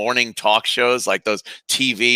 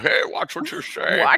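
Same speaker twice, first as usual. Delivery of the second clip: hushed, breathy put-on voice, pitched low; 12 semitones higher, 5 dB quieter than usual. Try a voice that leaves the listener asking who it is: Sean Connery attempt, more like Bane. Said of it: "Was that supposed to be um Sean Connery? ... I guess that sounded like more like Bane".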